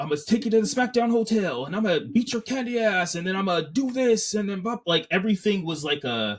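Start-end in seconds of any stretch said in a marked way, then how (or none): 0.0-4.8 pitched-up, boastful wrestling promo delivery. Retelling a wrestler's promo that sounded like The Rock: imitating The Rock's promo style. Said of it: "it sounded like The Rock".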